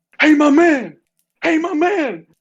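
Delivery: high-pitched, drawn-out loud yell. Retelling how a man in the street called to everyone: imitating a man yelling. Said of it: "He's just yelling".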